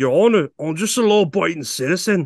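put-on Irish accent. Showing a listener his impression of an Irishman, Irish accent impression. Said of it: "do you want to hear my impression of an Irishman".

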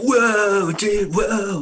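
very loud, high seventies surfer dude voice. Retelling what Randy says on ghost hunts: Randy's seventies surfer dude voice. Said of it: "He's like a seventies surfer dude".

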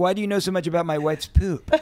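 suspicious, put-out, jealous and accusing voice. Imitating a husband getting jealous of the speaker: imitating a jealous husband. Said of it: "I don't want him getting jealous of me, going like".

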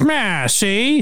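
put-on, high-pitched, old-fashioned, old-timey voice. Recalling a comedian's bit about a voice: old-timey voice. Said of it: "that old-timey voice".

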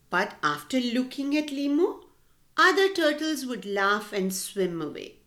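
ordinary delivery

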